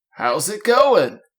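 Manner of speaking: put-on old man voice. Acting out the old kid version of a character, doing an old man impression. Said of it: "Spot on old man impression".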